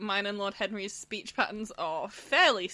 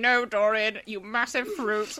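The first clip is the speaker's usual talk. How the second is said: put-on haughty character voice, louder; 5 dB louder than usual. Paraphrasing a scene, voicing Lord Henry answering Dorian: Lord Henry voice. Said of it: "In that voice".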